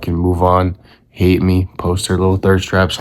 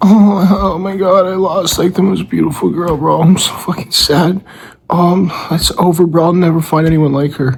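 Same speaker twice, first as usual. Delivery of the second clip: very high, mopey, self-pitying, fake sad whine; 11 semitones higher than usual. Describing how one could act after losing a girl; mock-sad whining. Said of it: "you can be like".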